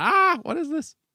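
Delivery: very high, puzzled, baffled voice. Imitating a mum who might not like the show: imitating Mum, put-on confusion. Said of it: "make her smile and not go".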